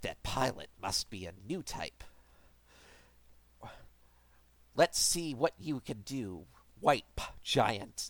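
smug, overly dramatic villain voice, hushed and soft. After describing how the character talks, try a smug, overly dramatic Char impression. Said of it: "I'm gonna try and do an impression".

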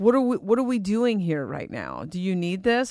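put-on mocking tone. Retelling what the guides said while high in the park, imitating the guides mocking. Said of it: "they said it kind of mocking".

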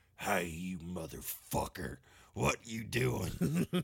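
put-on Appalachian accent. Describing Morpeko's big switch, voicing Morpeko in an Appalachian accent. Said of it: "I like Appalachian Morpeko".

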